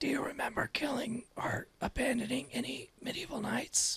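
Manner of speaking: very quiet theatrical stage whisper. Player leans over to Justin mid-game and asks him, stage whisper. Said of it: "stage whisper".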